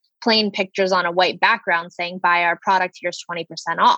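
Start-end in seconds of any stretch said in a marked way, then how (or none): none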